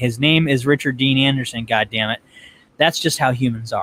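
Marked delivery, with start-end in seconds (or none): none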